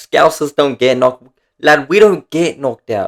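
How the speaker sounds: put-on Scouse accent. An Aussie recapping a fight, doing a bad Paddy Pimblett impression. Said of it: "I can't do the accent. I'm an Aussie".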